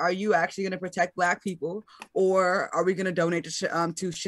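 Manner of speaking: plain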